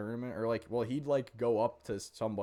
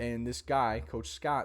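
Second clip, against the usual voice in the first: normal talking voice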